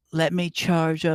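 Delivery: ordinary delivery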